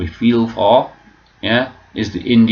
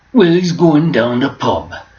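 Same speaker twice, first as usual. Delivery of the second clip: pitched-up, put-on Welsh accent; 6 semitones higher, 3 dB louder than usual. Attempting an impersonation of a man, in a welsh accent. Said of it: "still Welsh, isn't it?".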